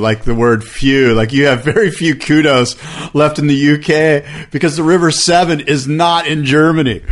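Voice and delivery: ordinary talk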